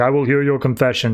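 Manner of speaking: booming godlike voice. Retelling a comic scene, voicing Saint Dumas hearing confession: booming godlike voice. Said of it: "this godlike voice is booming down".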